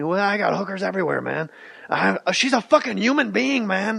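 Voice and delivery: bad, rough-edged, raspy put-on male voice. Speaker shows how he would do an impression of a guy: Charlie Sheen impression. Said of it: "That was a bad Charlie Sheen".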